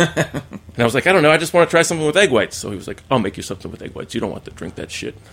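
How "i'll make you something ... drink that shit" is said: soft, breathy character voice. Retelling what he said to the speaker, Rich Picado impression. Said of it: "You got a pretty good Rich Picado".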